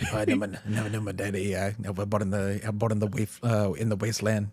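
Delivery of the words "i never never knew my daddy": put-on Cajun accent, quieter. Retelling a scene and quoting Gambit, in Gambit's Cajun accent. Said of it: "like Cajun, like very broken up English".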